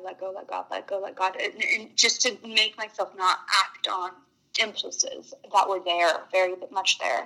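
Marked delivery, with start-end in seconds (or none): 0.0-1.4 quieter, put-on whisper under the breath. Retelling hard days of repeating a mantra to oneself: imitating whispering under breath. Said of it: "literally whispering under my breath".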